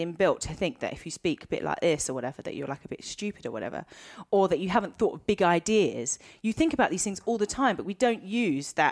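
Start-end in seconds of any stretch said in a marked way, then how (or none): none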